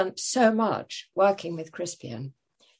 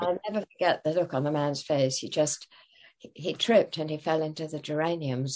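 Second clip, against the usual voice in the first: ordinary talk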